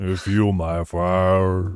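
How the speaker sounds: deep put-on voice with fire drawn out. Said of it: "say it in a [name] voice".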